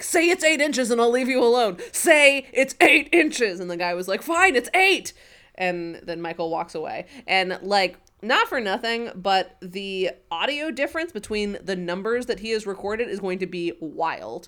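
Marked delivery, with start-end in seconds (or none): 0.0-3.6 full-on, high, loud screaming. Retelling how Michael pinned a man to a car and screamed: retelling Michael's screaming. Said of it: "is screaming at him".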